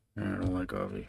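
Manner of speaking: big, deep, heavy mumbled voice. Retelling a reporter asking about coffee: deep mumbling Bill Belichick voice. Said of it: "Big heavy voice, mumbling".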